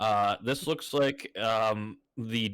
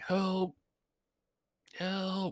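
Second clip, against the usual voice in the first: soft, weak, faint, muffled cry, pitched up; 9 semitones higher, 4 dB quieter than usual. Game narrator voicing an unseen figure crying for help, soft, weak voice calling out. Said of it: "a soft, weak voice just just calling out".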